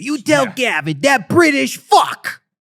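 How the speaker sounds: put-on Boston accent. Imitating how a boy with a boston accent talked: imitating a boy with a boston accent, higher pitched. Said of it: "he talked like this".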